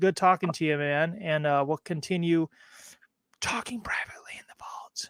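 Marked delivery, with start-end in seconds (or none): 3.4-5.1 hushed, secretive, mysterious whisper. Host ending the talk with Chris before moving to the private chat, whispering. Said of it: "I got to whisper when I say that".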